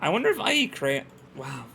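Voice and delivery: voice cracking and breaking. Playing a game and commenting aloud, voice cracking. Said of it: "A voice crack in my thirties?".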